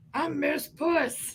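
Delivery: high puppet cat voice. Voicing a cat puppet introduced to the others: Miss Puss puppet voice. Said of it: "It is Mister and Miss Puss".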